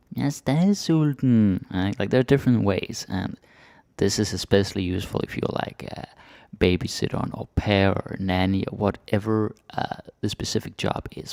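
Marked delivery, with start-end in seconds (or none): 0.1-1.6 put-on high, loud, childlike baby-talk voice. Demonstrating how some people speak to kids, in a baby voice. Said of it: "more like a baby voice".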